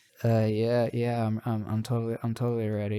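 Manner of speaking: very low, dazed, stumbling muttering. Retelling how Amuro answers the launch check: muttering as Amuro. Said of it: "he was muttering".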